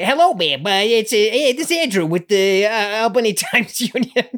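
high, horrific, fake New York accent.

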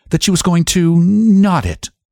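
agitated, flurried. The sheriff's wife answering the county attorney, in a flurried voice. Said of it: "in a flurried voice".

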